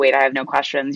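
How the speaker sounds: normal talking voice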